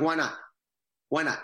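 worked-up, heated, fired-up tone. Retelling own reaction to being refused an audition: retelling fired-up protest. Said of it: "and now I'm fired up".

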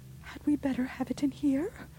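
feeble, strengthless, high-pitched voice. Narrator reads Rebecca asking Caroline about the light, asking weakly. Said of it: "asked Rebecca weakly".

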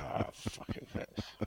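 whispered, muttered through clenched, gritted teeth. Imitating the other speaker's thanks for a T-shirt, imitating speaking through gritted teeth. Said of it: "you do that through gritted teeth".

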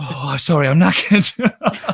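mock exhausted, breathless, worn-out voice. Imitating the other speaker going on air after sport: mock out of breath. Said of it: "Didn't sound like I was doing sport there".

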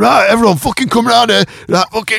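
put-on broad northern English accent, very high-pitched. Acting out a magician addressing everyone, using Magic Sam's really strong northern accent. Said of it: "he's got a really strong northern accent. He's like".

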